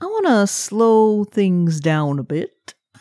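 exaggerated cartoon Southern drawl. Answering Griffin on the show, in a Foghorn Leghorn voice. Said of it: "It's very Foghorn Leghorn".

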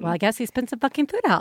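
voice like a mother's. Imitating how a mother said it to her son: imitating a mom voice. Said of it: "I'm using my mom voice".

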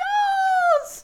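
very high, loud shouted squeal, not scary. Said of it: "Not like even a scary voice".

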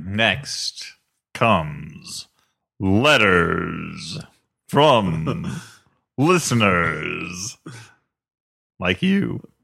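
put-on voice, dropped low, every word stretched slowly. Announcing the next segment of the show: Michael Buffer voice. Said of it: "Michael Buffer coming? Are you gonna talk like that".

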